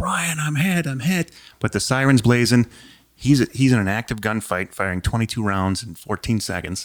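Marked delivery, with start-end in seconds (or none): 0.0-1.3 very high, all-out, shrieked scream. Retelling being hit during a gunfight with a siren blaring: retelling a scream for help. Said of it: "I'm screaming for Brian".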